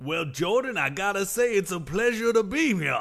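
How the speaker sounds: put-on strong, thick accent from Georgia. Playing the Chairman of Augusta National, welcomed into the studio: thick Georgia accent. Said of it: "You have a very thick Georgian accent".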